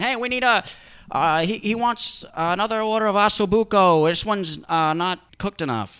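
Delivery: loud, drawn-out call, like a chef. Retelling a chef calling out an order in an open kitchen: imitating a yelling chef. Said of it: "the chef going".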